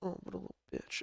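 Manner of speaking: very quiet whisper under the breath. Acting out someone turning round after being yelled at: imitating a whispered insult. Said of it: "whispers the insult".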